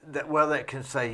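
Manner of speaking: ordinary talk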